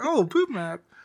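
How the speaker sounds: mock ecstatic delight. Retelling how a character reacted to a gift: imitating her sounding happy. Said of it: "all happy and everything".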